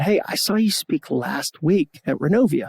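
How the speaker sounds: normal talking voice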